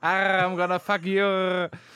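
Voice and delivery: worst-ever pirate accent, very slow and drawn out. Joking about a pirate's career, then doing a bad pirate accent. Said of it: "That's the worst pirate accent I've ever heard".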